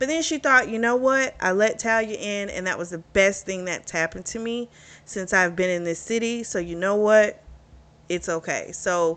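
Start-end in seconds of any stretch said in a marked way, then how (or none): none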